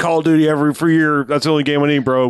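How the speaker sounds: very high, shrill, loud dudebro gamer voice. Mocking gamers who only play call of duty: mocking a bro gamer. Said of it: "the same ones that are like".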